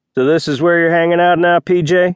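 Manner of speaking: drawn-out, insulting drawl. Derek steps in front of pj and speaks to her in an insulting drawl. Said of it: "Derek drawled".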